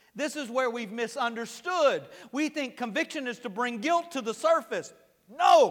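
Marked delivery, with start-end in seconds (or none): 5.3-5.7 loud, booming preacher voice. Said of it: "I got into my preacher voice then".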